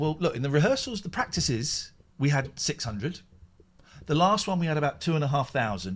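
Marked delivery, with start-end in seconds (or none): none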